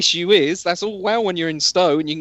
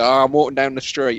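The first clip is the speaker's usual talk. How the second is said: normal talking voice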